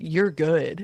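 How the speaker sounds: easygoing, relaxed surfer dude voice. Trying out a voice for the boy in the story: Keanu Reeves voice. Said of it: "Like a Keanu Reeves".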